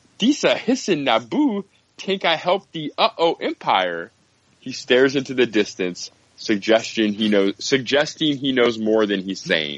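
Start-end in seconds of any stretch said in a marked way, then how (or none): 0.2-4.1 high, swooping, sing-song broken-English creature voice. Reading Jar Jar's lines from an article aloud: Jar Jar Binks voice. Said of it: "I'll do voice".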